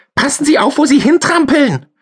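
very high, squeaky, shrill, nagging falsetto. A voice from below his feet addresses him: shrill nagging falsetto. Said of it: "erklang eine keifende Fistelstimme".

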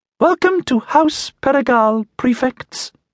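very high, squeaking, squeaky voice. A house servitor halts before the prefects and greets them, in a squeaky voice. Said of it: "it said in a squeaky voice".

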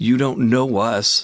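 high, frightened, nervous shout with quavering voice. Confronted by an unseen voice, a woman shouts back nervously, her voice shaking. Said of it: "Louise shouted nervously, her voice beginning to shake".

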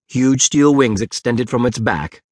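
plain reading voice

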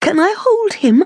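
very high, spellbound gushing. Seeing the newborn brother for the first time, the narrator asks, gushing, mesmerised. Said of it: "I gushed, utterly mesmerised".

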